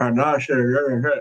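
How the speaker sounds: dithering, stalling, lost-for-words uh-uh hesitation. Mocking how the referee stood there explaining the call: imitating the referee. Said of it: "that no-lipped fucker is stood there going".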